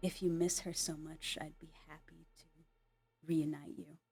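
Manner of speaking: menacing, threatening whisper. Voicing a character leaning close to a wounded foe: menacing whisper. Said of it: "As he whispers to you".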